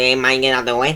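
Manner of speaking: bad, cartoonish, laid-on-thick Mexican accent. Showing the old accent copied from a cartoon: Family Guy Mexican accent. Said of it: "what the Mexicans speak like in Family Guy".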